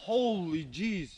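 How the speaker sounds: exclamatory delivery with voice breaking and cracking. Seeing a huge wolf, the speaker exclaims with a voice crack. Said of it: "did you hear that voice crack?".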